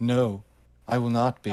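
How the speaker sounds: plain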